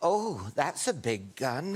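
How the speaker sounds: slow, drawn-out, flirtatious drawl. Retelling what she said when they got pulled over, as a Mae West impression. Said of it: "[name] just turned into Mae West".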